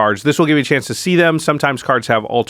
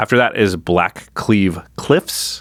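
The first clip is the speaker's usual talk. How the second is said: slow, drawn-out, deliberate, careful pronunciation; 3 semitones lower than usual. Listing the lands in a deck, reaching a hard-to-say card name; said slowly. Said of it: "I had to say it slowly".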